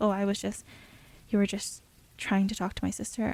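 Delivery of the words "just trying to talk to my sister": plain reading voice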